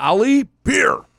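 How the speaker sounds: loud, very high-pitched shouted call. Speaker retells calling to the ship's bartender for a beer, retelling a yell. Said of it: "and I yelled".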